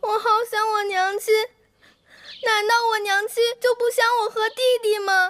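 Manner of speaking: slow, crying, lamenting voice. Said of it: "别哭".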